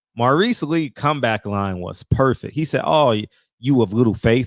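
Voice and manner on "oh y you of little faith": ordinary talk, nothing marked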